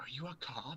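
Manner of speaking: secretive, leaning-in, conspiratorial, slightly high voice. As Sophie, asking the others a question, conspiratorial. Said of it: "leans forward like real conspiratorially".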